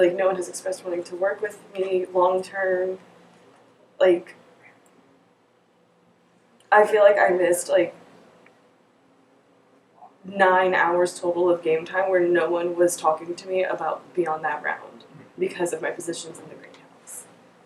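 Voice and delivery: tearful, crying through the words. A game player explains that no one talked to them, crying while talking. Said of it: "I want to say stop crying".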